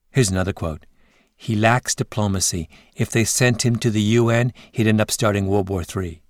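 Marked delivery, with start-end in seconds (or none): none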